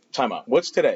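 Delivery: ordinary delivery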